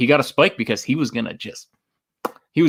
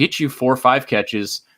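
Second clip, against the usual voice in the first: plain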